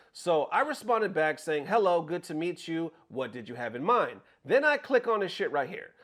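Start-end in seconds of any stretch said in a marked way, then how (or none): none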